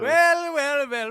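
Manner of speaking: very high, very loud, belted wrestling promo style taunt. Trying Becky Lynch's voice again after being urged by others. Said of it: "it turns into Mister Miss Doubtfire".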